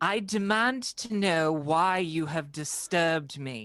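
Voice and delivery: firm, imperious, authoritative commanding voice. Playing a character in a game, putting on their best commanding voice. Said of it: "put on my best commanding voice and say".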